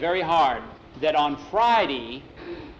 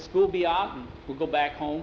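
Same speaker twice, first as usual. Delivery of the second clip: ordinary delivery, nothing marked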